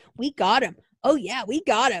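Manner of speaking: put-on arrogant gloating tone. Retelling a phone call bit, imitating the Bucks acting arrogant. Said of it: "acting all, like, arrogant as fuck".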